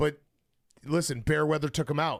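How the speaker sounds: usual speaking voice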